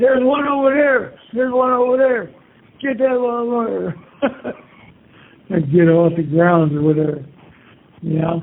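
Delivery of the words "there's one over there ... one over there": high, yelling sheriff voice. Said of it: "and the sheriff's yelling".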